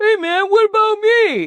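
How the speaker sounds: very high, loud, drawn-out character voice. Acting out YouTube left out in the corner: voicing YouTube as a character. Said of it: "YouTube was over in the corner going".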